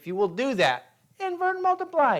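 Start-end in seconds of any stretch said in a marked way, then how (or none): 1.2-2.2 tiny squeaking voice, pitched very high. Speaker shows listeners how to make their pencil talk, high squeaky pencil voice. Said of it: "in a high squeaky voice".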